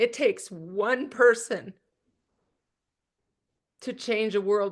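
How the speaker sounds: voice choking up, on the verge of tears. Addressing listeners, saying they're about to cry, choking up. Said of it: "I'm gonna cry".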